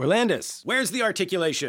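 very high, shrill, demanding shout. Showing how a demanding teacher sometimes has to shout at a student. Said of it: "Sometimes teachers have to shout".

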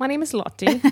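put-on British accent. Imitating a voicemail caller named Lottie: imitating Lottie's British accent. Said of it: "Lottie all of a sudden does seem very British".

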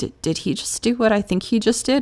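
voiced stage whisper. Retelling sitting at the table in court: imitating own half-whisper.

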